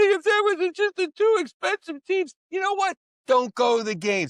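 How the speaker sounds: mock, high, loud, whiny, bitter fan voice.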